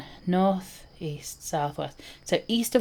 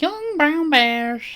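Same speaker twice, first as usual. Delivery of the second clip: put-on old lady voice, much higher, slower; 10 semitones higher, 5 dB louder than usual. Picturing an old lady saying the phrase, the speaker does an old lady voice. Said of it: "an image of an old lady going".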